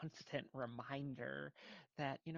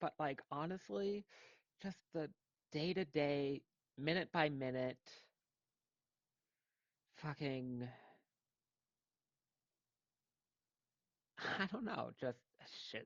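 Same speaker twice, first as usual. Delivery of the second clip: slightly emotional, halting, rambling speech; 5 dB louder than usual. Mid-conversation, starting to get a little emotional. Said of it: "I'm getting a little emotional".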